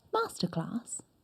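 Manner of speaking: breathy, whispered posh Received Pronunciation accent. Asked to say the word in received pronunciation. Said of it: "do it in R P".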